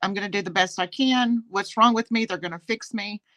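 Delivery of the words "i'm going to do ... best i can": ordinary delivery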